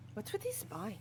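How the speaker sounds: very high-pitched whispered aside. Commenting on an old man within earshot, whispering. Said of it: "I'm whispering it".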